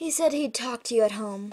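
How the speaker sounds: ordinary delivery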